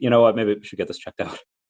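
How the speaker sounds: normal talking voice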